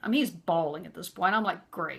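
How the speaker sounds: ordinary delivery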